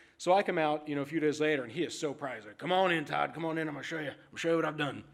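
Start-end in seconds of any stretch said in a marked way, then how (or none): 2.6-4.9 eager put-on Texas accent. Retelling a dog owner proudly inviting him in: imitating a man in a texas accent. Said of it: "I always use a Texas accent when I do this guy's voice".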